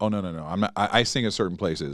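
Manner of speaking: plain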